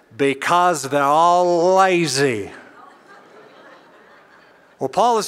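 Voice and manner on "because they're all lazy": drawn-out, slow, classic Texas preacher drawl. Retelling a Bible teacher's answer in an interview: J. Vernon McGee Texas drawl. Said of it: "the classic J. Vernon McGee, uh, Texas drawl".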